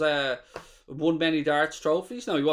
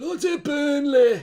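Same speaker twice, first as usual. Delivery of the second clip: exaggerated put-on cry, high, loud and slow; 11 semitones higher, 6 dB louder than usual. Impersonating Goldbridge doing an impression as Burnley lead Leeds: Goldbridge impression. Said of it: "my best Goldbridge impression of Goldbridge doing an impression".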